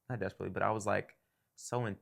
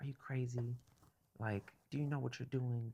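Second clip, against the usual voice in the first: put-on upset scolding tone, higher and quieter; 4 semitones higher, 5 dB quieter than usual. Retelling how his mom reacted to finding out, imitating an upset mom. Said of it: "my mom was so upset".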